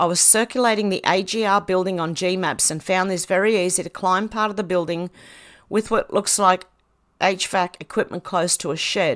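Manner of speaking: normal talking voice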